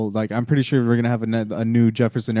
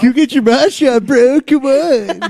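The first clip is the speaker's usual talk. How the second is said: joking put-on surfer voice, higher and louder; 10 dB louder than usual. Joking about getting your mosh on: joking surfer dude voice. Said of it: "You sound like a surfer, dude".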